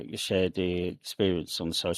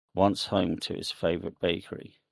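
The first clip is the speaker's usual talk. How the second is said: ordinary delivery, nothing marked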